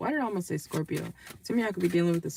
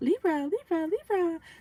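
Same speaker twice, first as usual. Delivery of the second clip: very high-pitched, annoying, nagging call; 11 semitones higher than usual. Calling out to a Libra, imitating this person's high-pitched voice. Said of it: "this person has like a high pitched voice".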